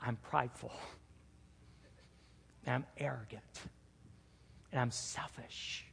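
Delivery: hushed, soft, breathy whisper. Retelling a morning prayer confessing sins to God: retelling own whisper. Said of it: "with me speaking in a whisper".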